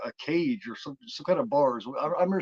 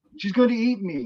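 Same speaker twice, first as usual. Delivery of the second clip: put-on boy's scream, higher and louder; 8 semitones higher, 6 dB louder than usual. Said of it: "kid screams again".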